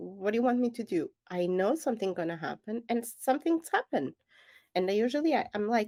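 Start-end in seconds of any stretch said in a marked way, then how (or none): none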